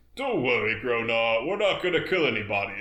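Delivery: plain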